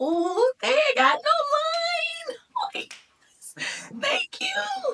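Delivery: thrilled, relieved squeal.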